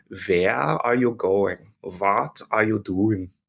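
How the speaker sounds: thick put-on German accent, w said as v. Teaching that german w sounds like english v: stereotypical german accent. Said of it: "To use those nice stereotypical accents there".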